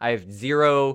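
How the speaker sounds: ordinary delivery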